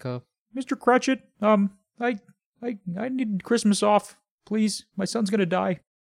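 very high, squeaky little cartoon frog voice. Retelling a Muppet Christmas Carol scene, quoting Kermit: Kermit voice. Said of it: "Kermit and his little Kermit kids. He's like".

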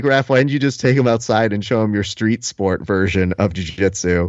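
plain

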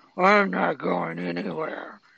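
loud, slow, drawn-out, echoing movie-style voice. Mocking an animated wolf's telepathic line: imitating an echoing voice. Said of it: "this echo voice like".

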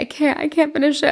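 put-on crying voice. Retelling trying to read it aloud and being unable to finish: retelling crying too hard. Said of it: "I'm crying too hard".

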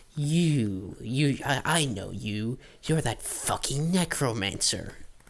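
hostile, halting, slow, with drawn-out "you". Voicing a character who narrows her eyes at someone: hostile glaring character. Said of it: "glares at you".

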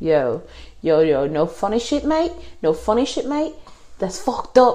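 bad New Zealand accent. Retelling how the other guy reacted when his game CD got cracked, bad New Zealand accent. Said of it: "I don't know how to do a New Zealand accent".

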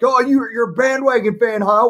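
very high, shrill, jeering taunting scream. Recounting a night in a bar, the speaker imitates other Viking fans screaming taunts. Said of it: "going up and screaming at him".

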